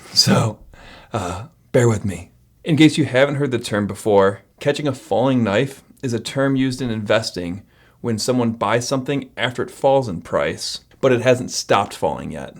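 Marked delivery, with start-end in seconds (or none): 0.1-2.3 damaged, strained voice, much slower. Speaker apologizing to viewers after being choked out, in an unstrained, damaged voice. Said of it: "this is what it sounds like if I don't strain".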